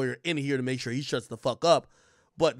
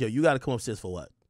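mock sassy cop voice, lower; 4 semitones lower than usual. Voicing a cop questioning her about coming upstairs: imitating a sassy cop. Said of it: "this cop is getting a little sassy with her".

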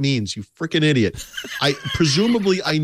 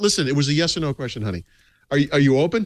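plain

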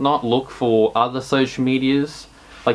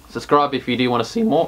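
voice cracking. Speaker asking video viewers to subscribe, voice cracking. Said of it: "that's a voice crack".

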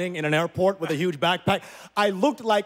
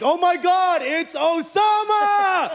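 mock very high, slow, drawn-out scream; 12 semitones higher, 5 dB louder than usual. Recounting a man spotting him across an airport, retelling a scream. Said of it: "he screams my name in the airport".

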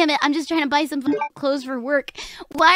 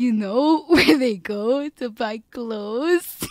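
mock careful enunciation, lower pitch; 4 semitones lower than usual. Telling listeners how he spoke to Siri, mimicking his enunciation. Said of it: "His little enunciation where he's like".

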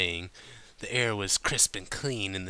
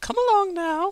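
primly proper, very high, raised voice; 7 dB louder than usual. Interrupting another character and dragging her away with magic, prim. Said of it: "Rarity interrupted primly".

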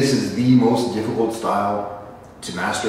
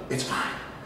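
hushed whisper under the breath. Speaking to viewers about stupid fighters, whispering.

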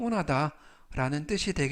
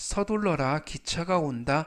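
plain

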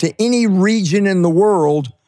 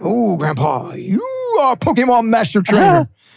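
swooping Japanese anime cartoon character voice; 4 semitones higher than usual. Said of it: "She's talking to me in the cartoon voice".

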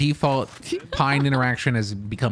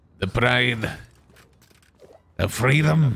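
put-on Scottish-accented voice. Trying out accents with others, answering in a Scottish accent.

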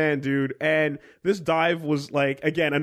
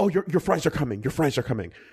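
fast, nervous, anxious, placating tone, eager to soothe. Retelling how a waitress rushed in about the fries: imitating an anxious placating waitress. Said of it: "in a way that was like, "Please, please don't be upset."".

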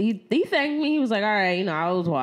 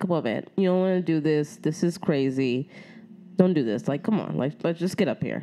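very calm, steady, low coaxing; 5 semitones lower, 4 dB quieter than usual. Retelling what you said to the man as a train approached: retelling speaking very calmly. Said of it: "I said to him very calmly".

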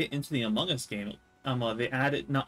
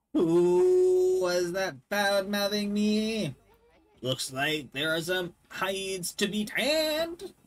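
put-on higher-pitched old man's voice; 7 semitones higher than usual. Reading a game character's lines aloud: Gramps voice. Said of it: "I feel like his voice is".

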